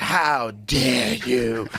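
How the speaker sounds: put-on speaking as a girl. Imitating a climate activist's famous line: Greta Thunberg voice. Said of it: "This one girl was like".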